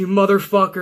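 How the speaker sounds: ordinary talk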